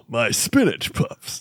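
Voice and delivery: offhand, tossed-off character voice. Asked by another speaker to say the line: Patrick Warburton impression. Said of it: "In, in Patrick?".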